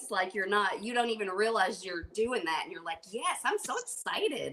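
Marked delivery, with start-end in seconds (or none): 3.1-4.5 acted, high, drawn-out enthusiasm in Canadian accent. Telling a friend how they sound on video: imitating Shane's Canadian enthusiasm. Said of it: "a Canadian way".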